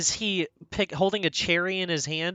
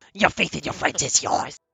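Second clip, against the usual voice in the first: furious villain voice. Quoting what the Emperor says, angry Emperor voice. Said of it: "what's that thing the Emperor says so angrily?".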